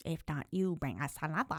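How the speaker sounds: creepy put-on monster voice. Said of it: "It didn't talk like that".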